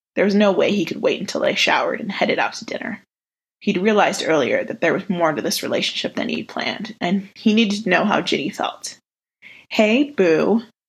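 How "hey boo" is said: playful, ribbing, teasing tone. Narrating a story, Ginny greets Blaze as he approaches her; teasing. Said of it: "Ginny teased".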